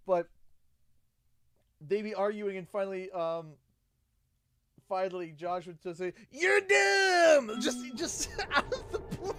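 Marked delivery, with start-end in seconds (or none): 6.3-7.6 weird put-on Southern accent, much higher pitch. Retelling an argument, the speaker quotes Josh's sudden line in a weird Southern accent. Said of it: "just the southern, just this weird".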